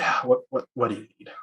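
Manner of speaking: weary sigh. Answering a crewmate in character in a role-play game: with a weary sigh. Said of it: "I just sigh and say".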